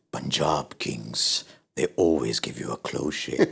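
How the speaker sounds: deep, breathy, trailer-style narrator voiceover. Talking about Punjab Kings' close games, imagining a voiceover about them: deep voiceover voice. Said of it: "this deep voiceover saying".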